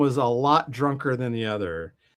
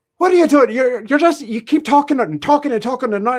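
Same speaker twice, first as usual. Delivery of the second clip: very high, quick-fire, rushed put-on Irish accent; 11 semitones higher, 7 dB louder than usual. Retelling what they said to a man who kept talking, in an Irish accent. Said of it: "I was like doing an Irish accent".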